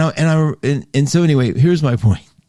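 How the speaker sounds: normal talking voice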